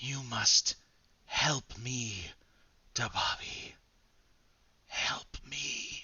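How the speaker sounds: disembodied, soft, hushed whisper. Narrating the voice that whispers to dababi through the headset, whispering. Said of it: "this voice whispers to you".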